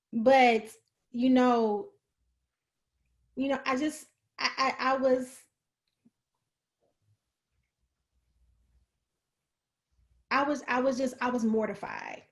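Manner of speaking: halting, stammering voice, fighting back tears, teary. Recalling being embarrassed after abuse became public: holding back tears. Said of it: "I'm trying to fight back tears".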